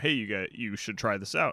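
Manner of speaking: ordinary talk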